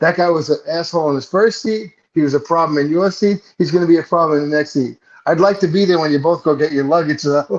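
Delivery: plain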